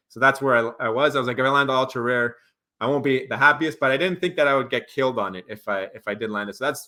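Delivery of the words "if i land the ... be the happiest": plain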